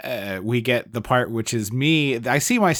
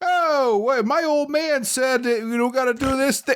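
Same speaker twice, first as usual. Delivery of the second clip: put-on pitched-up, old-fashioned 1940s Brooklyn accent; 14 semitones higher than usual. Quoting a kid who talked strangely in small-town America: 1940s Brooklyn accent. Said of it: "transported via Star Trek transporter from Brooklyn in nineteen forty-four".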